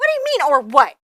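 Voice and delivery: high, loud shrill outburst. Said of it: "apologize for my shrill voice".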